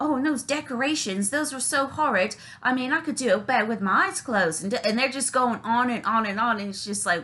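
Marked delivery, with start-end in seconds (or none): 0.0-4.6 mock put-on British accent. Imitating someone badmouthing what they praised to the person's face, in a put-on British accent. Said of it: "let me do the British accent".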